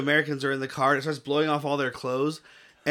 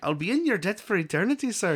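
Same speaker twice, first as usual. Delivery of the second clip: bad, unconvincing put-on Irish accent, pitched higher; 5 semitones higher than usual. Quoting Daryl Hannah's movie line, in a bad Daryl Hannah Irish accent. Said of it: "she had an Irish accent".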